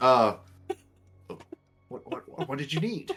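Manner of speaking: nervous, jittery stammering, tripping over the words. Voicing a jailer who speaks to a visitor: nervous jailer. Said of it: "the jailer's getting a little nervous".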